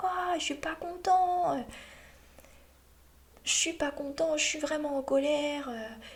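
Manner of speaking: high little monster voice. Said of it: "je prends une petite voix".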